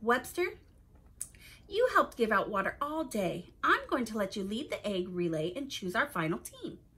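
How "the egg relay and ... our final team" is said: ordinary delivery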